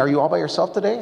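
quick, mildly cheerful, friendly delivery. Speaker retells the coffee shop owner asking if they're alone, imitating a somewhat happy voice. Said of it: "in a somewhat happy voice".

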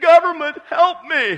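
mock very high, very loud, shrill wailing and crying. Imitating a listener pleading to the pastor for help: mock crying plea. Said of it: "You're full of crying noise".

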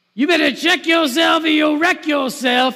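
shrill, very loud, top-of-the-lungs screaming. A chaplain retells an alcoholic lady on her balcony, imitating a woman screaming. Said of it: "screaming at the top of her lungs".

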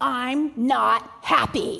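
mock bossy toddler voice, rough and very loud. Retelling what a three-year-old girl said in front of salesmen and customers, in her loudest three-year-old voice. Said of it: "in her loudest 3-year-old voice".

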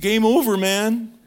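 high-pitched, loud, shouted outburst. Talking to listeners about God's rejection, drop into your best Bill Paxton voice. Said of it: "in my best Bill Paxton voice".

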